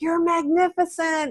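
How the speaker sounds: put-on soft whisper. Voicing the inner big voice telling you good things: imitating a soft whisper. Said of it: "really soft and they're like whispers".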